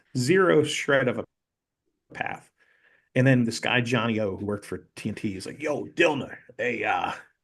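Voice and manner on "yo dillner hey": put-on New York accent, slower. Retelling how a TNT staffer called out to him; Johnny O's New York accent. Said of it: "he's got this New York accent".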